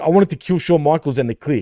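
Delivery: ordinary talk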